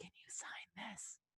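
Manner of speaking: very quiet, hushed, secretive whisper. Retelling how a man runs up and whispers in Ariza's ear, whispering. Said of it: "he whispers in Ariza's ear".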